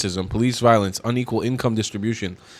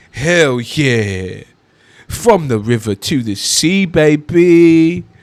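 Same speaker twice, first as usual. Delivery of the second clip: very slow, very drawn-out, mocking drawl; 5 semitones higher, 7 dB louder than usual. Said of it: "the inflection in which he says it".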